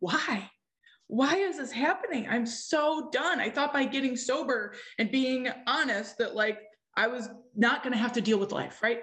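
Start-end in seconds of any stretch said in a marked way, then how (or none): 0.0-3.4 slow, tearful crying, words breaking, pleading tone. Retelling crying on the floor and yelling up to God: retelling own past crying yell. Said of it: "I was crying and I was just yelling up to God".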